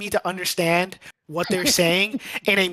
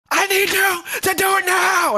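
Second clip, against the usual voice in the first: piercing, shrill scream pitched very high; 11 semitones higher, 3 dB louder than usual. Retelling how a dude screamed at him over the headset, imitating someone screaming. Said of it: "He's screaming at me over the headset".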